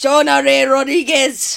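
put-on Spanish accent, mock Spanish pronunciation. Reading out a film's cast list in a put-on Spanish accent. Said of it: "that sounded Spanish".

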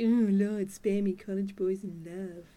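mock haughty, condescending tone. Retelling a scene, imitating Walsh being condescending. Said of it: "condescending asshole Walsh scene where she's all like".

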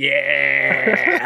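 drawn-out, gleeful, smug, creaky "yeah".

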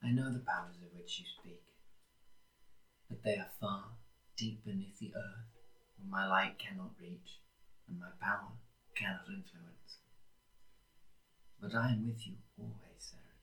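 very quiet, faint whisper with echo. A bodiless voice in the open air answers Saren: faint echoing whisper. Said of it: "inside of which begins to corporeate just a sort of faint whisper. Not taking shape, but you can sort of hear a voice echo around the open air. / but you can sort of hear a voice echo around the open".

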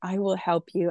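acted, tearful, crying, begging voice. Retelling how a woman begged while crying, imitating someone crying. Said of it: "she just begged me and she's crying".

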